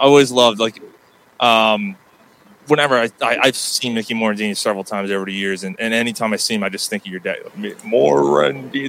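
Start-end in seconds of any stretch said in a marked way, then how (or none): 7.6-8.9 gravelly, creaky voice. Impersonating the other speaker's dad saying a player's name. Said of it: "trying to impersonate your dad".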